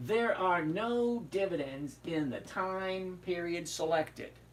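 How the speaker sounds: unhurried, slow, deliberate, word-by-word reading. Reading a no-dividends notice so viewers get it, read slowly. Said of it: "I'll read it slower so you can get it".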